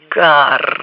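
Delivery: said with a groan. A narrator reads a character's one-word reply to the pilot, groaned. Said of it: "простонал Флетч".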